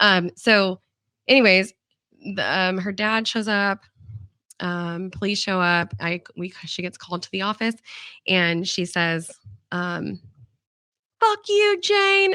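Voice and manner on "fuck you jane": play-acted loud, high, shrill, angry screaming. Retelling a student screaming at her in the office: imitating a student screaming. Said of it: "she's screaming at me".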